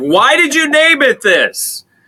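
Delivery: furious yelling, very high and loud. Speaker recounts how a man yelled at them: retelling an angry yell. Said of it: "at one point he was yelling at me".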